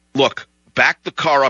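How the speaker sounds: normal talking voice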